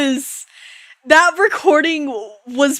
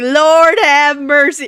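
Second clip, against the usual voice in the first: put-on Southern accent; 4 dB louder than usual. Recalling a recording session, imitating Ryoko's put-on southern accent. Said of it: "started like putting on a southern accent and was like".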